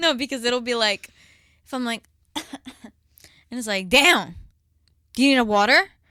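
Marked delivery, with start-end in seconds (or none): 3.9-5.8 very loud, judgmental, unfriendly tone. Imitating how the other speaker offers a water, in a mock unfriendly tone. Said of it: "That doesn't sound friendly".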